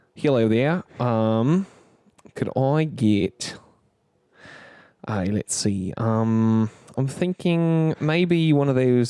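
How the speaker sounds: fake Australian accent slipping toward New Zealand, halting. Reenacting your own past order, in a bad australian accent. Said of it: "this is more New Zealand. I'm realizing".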